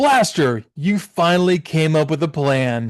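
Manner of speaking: talking down with approval, patronizing. Retelling a cartoon scene, quoting a leader: patronizing Optimus Prime voice. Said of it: "Optimus Prime's very patronizingly says".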